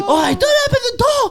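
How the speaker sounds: very high, slow, drawn-out squeaky scream. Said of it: "I start screaming".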